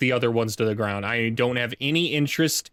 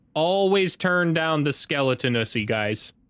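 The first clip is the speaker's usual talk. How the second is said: ordinary delivery, nothing marked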